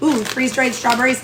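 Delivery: ordinary talk, nothing marked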